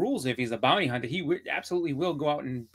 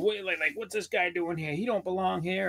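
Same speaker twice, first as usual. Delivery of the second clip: mock, half-shouted, mildly yelling wrestler voice; 4 semitones higher than usual. Retelling how Hogan reacted to a surprise arrival: imitating Hogan yelling. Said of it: "Hogan really sold it up by being like".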